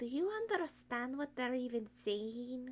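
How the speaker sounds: soft, hushed, under-the-breath half-whisper. As [name], leaning over to Ian to ask him, half-whispering. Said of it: "I'm whispering yeah".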